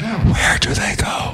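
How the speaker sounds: slow, eerie, spooky, creepy whisper. Asking where listeners can find a guest's work: creepy whisper. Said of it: "let me give you a creepy whisper".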